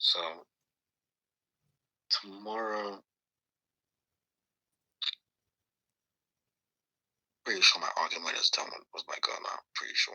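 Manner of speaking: soft, very quiet half-whisper under the breath. Speaking to listeners while not in the bedroom: half-whispering. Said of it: "I'm like whispering".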